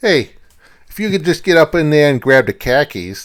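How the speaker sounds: put-on poor high Boston accent. Acting out a scene: bad Boston accent. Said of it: "I don't have a good Boston accent".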